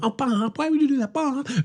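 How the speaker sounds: very high, soft, gentle, reproachful motherly voice. Telling a story about a family prank, the speaker imitates their mom. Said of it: "my mom's like".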